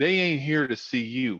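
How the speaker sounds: put-on American Southern accent. Retelling a man's remark imitating the speaker's accent, put-on southern accent. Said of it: "tried to do my southern accent".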